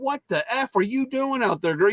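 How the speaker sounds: high mock yelling. Retelling yelling at a girl while she played: imitating own past yelling. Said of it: "I'm yelling at her".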